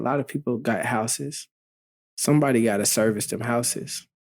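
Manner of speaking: ordinary delivery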